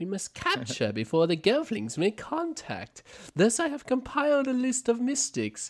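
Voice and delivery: very high, swooping pitch, bad put-on impersonation. Recapping a scene, redoing the line as a bad Chamberlain impression. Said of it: "I should probably do this in the Chamberlain's voice".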